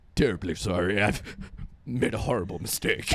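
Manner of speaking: very low, comically deep, robotic voice.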